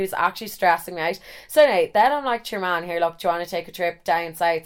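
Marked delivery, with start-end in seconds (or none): none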